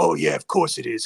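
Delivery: creaky, ground-out, mildly irritated delivery. Retelling a film commentary moment, imitating Robert Downey Jr. sounding bugged. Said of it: "sounds a little bugged by it".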